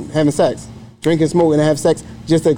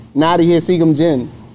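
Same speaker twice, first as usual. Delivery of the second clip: ordinary delivery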